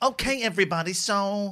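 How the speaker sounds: put-on English accent. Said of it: "this is me doing [name] doing an English accent".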